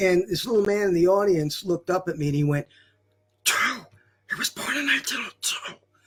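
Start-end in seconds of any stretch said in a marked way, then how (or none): 3.4-5.7 loud whisper meant to carry, high. Retelling an old man's correction from the audience at a gig: imitating a stage whisper. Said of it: "in a stage whisper".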